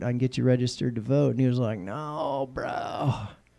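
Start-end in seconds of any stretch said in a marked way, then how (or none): 1.8-3.1 soft, chill, laid-back cool dude, brushing it off. Retelling a man's reply to an offer to register him to vote, laid-back cool guy voice. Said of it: "More of a cool guy kind of voice".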